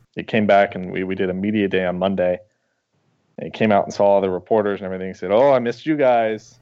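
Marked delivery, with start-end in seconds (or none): 5.3-6.4 put-on heavy, laid-on French Canadian accent. Quoting him greeting the reporters at media day, in a thick French Canadian accent. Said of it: "in this real thick French Canadian accent".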